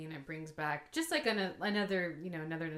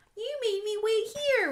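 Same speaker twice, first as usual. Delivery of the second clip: put-on very high, loud, piping little girl voice; 8 dB louder than usual. Retelling a scene from The Great Pumpkin: imitating Sally's little girl voice. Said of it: "her little girl voice".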